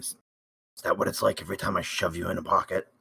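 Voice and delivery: very soft, hushed, barely above a breath. As Horax, turning to a companion to ask a question, very quietly. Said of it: "very quietly".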